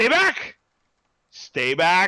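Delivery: very slow, drawn-out, loud swooping shout. Voicing a character cornered against a wall: in-character yelling. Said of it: "he's yelling you to stay back".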